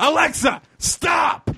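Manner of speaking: mock very high, all-out shout from the lungs. Telling how they yelled at a smart alarm while meditating, re-enacting shouting louder. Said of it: "getting louder and louder".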